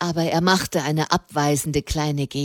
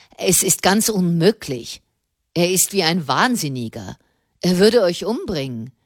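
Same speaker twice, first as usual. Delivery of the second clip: ordinary delivery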